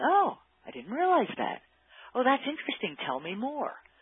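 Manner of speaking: high-pitched, cheerful and curious. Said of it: "is cheerfully saying".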